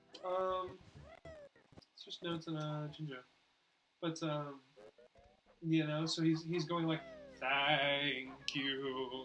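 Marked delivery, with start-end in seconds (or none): 7.3-9.2 eerie, spooky, ghostly haunting voice. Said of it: "spooky ghost type vibe".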